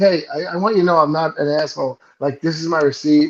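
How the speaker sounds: ordinary talk, nothing marked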